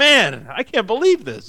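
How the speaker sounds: mock narrator caught off guard, slow, swooping surprise. Joking about the narrator finally reacting to the story: imitating the surprised narrator. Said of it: "the narrator is finally surprised by this".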